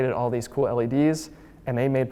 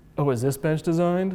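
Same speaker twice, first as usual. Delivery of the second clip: snarky, sarcastic, snide schoolkid voice; 3 semitones higher than usual. Retelling a tour where a kid asked about a normal bench: imitating a sarcastic kid. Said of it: "That was my impression".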